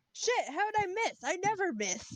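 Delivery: shouting. Character whose shot ricochets into machinery, reacting to the miss: yelling. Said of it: "Just yells".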